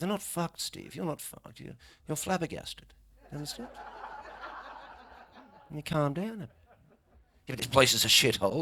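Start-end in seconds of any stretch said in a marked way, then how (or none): 0.0-6.5 breathy, hushed, calm posh English near-whisper. Retelling how a friend talked him down, the speaker does Clive's calm voice. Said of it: "Clive was like".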